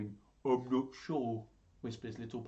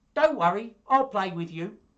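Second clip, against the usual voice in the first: very loud, high, bright seal cub voice; 8 semitones higher, 11 dB louder than usual. Reading a story aloud, the speaker gives the little seal cub a voice: little seal cub voice. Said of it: "That's what I think little seal cub sounds like".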